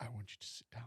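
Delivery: very soft, hushed, very sexy, seductive voice. Addressing everyone after a big deep breath in, in a very sexy voice. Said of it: "Very sexy voice".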